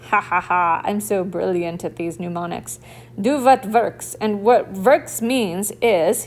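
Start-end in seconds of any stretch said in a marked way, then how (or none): 3.2-4.1 loud, jokey, deliberately put-on Russian accent. Teaching the mnemonic: put-on Russian accent. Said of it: "you have to say it with a Russian accent like that".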